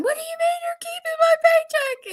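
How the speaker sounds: high, shrill screaming holler, pitched way up. Retelling going into the bank over a kept paycheck: imitating own screaming and hollering. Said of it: "Went inside screaming and hollering".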